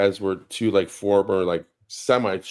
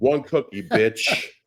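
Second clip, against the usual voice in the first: mock scolding grandma voice, higher; 4 semitones higher than usual. Retelling how a grandma reprimanded a child for a second cookie: imitating a scolding italian grandma. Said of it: "This particular grandma was like".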